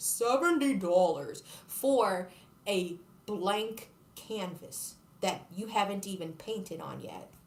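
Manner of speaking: deliberately slowed-down, drawn-out delivery. Complaining about a seventy-dollar canvas, the speaker does the TikTok slowed-down voice. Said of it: "like the slow down voice".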